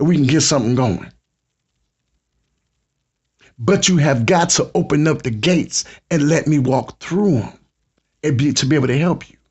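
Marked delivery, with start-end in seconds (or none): none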